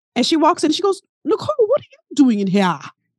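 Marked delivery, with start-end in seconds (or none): 1.3-2.8 put-on poorly done Caribbean accent, swooping pitch. Quoting a woman who walks into the faculty lounge, in a bad Caribbean accent. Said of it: "I'm about to mess up her Caribbean accent".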